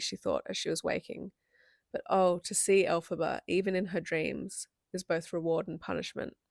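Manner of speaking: ordinary delivery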